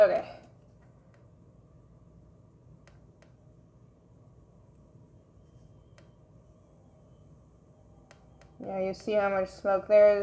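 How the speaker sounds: covered, muffled voice. Making something with a face shield over the mouth: muffled voice behind face shield. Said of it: "my voice is all muffled right now".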